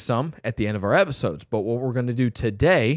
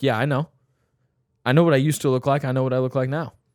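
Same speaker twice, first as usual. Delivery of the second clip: put-on, acted cocky tone; 2 semitones higher than usual. Acting out a reply to a sarcastic compliment: acting a cocky reply. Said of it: "I'll be a little bit cocky here".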